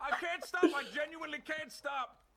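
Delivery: very high, frantic, panicked voice. Unable to stop, the speaker talks in a panicked voice. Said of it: "The panic in your voice".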